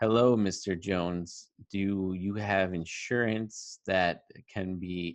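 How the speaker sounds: very slow, unconfident, semi-robotic reading. Imitating a disliked insurance sales call: mock robotic sales-call read. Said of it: "It sounds semi-robotic, um, not confident, unrehearsed".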